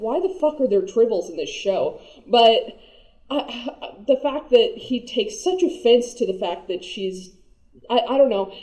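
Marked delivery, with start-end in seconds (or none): none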